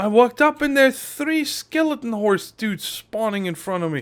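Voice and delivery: shaken, startled, frightened, high scared voice. Player sees skeleton horses spawning in front of him in Minecraft; scared. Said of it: "that really scared me".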